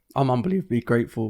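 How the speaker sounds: emotional voice cracking and catching on words. Speaker talking about his best mate, voice cracking with emotion. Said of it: "My voice just cracked".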